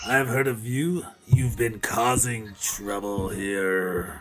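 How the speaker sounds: somewhat growly monster-like voice. Voicing a werewolf character as he saunters up, a little more growly. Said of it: "This is a little bit more growly sounding".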